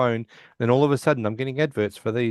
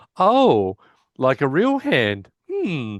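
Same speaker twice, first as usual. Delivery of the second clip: very slow, drawn-out, swooping realization; 4 semitones higher, 4 dB louder than usual. Retelling a light bulb moment from the episode: imitating Howard. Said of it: "that light bulb moment that he goes like".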